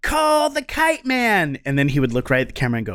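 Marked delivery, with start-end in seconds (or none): 0.0-1.6 put-on very high, drawn-out group shout of kids, acted. Retelling a commercial where the kids answer the question: imitating kids yelling. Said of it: "all the kids would yell".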